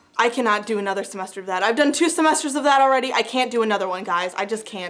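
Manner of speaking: ordinary delivery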